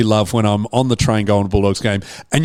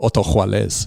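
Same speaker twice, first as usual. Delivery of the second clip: name said with a Latin American Spanish accent; 4 semitones lower, 4 dB quieter than usual.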